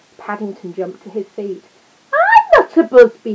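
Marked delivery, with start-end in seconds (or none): 2.1-3.3 very high, very loud, drawn-out exclamation. Paddington jumps to his feet and answers the small boy: crying out. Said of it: "he cried".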